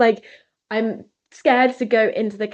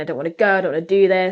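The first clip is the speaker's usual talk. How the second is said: put-on tearful, crying voice; 3 semitones lower than usual. Retelling protesting before arriving here: imitating own crying. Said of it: "I was crying, I was saying".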